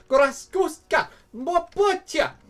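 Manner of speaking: high-pitched, shrill, loud, frantic screaming. Voicing a dying character in a game, screaming. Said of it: "She's just screaming".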